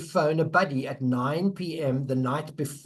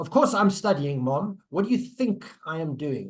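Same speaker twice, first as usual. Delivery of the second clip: put-on heavy sarcasm, teenage back-talk voice. Acting out a teenager fighting with parents: imitating a sarcastic teenager. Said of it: "With a good dollop of sarcasm".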